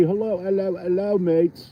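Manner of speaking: put-on Australian accent. Greeting viewers while ice fishing, in a put-on Aussie accent. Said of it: "That's my Aussie accent".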